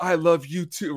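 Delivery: fighting back tears. Retelling a film scene where the father answers his daughter: imitating Orbach holding back tears. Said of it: "he's trying not to tear up".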